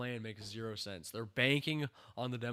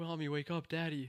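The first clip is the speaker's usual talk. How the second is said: acted, terrified, frightened little girl voice; 5 semitones higher than usual. Retelling a show scene where a girl calls her parents: imitating a terrified girl. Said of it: "terrified, this poor girl".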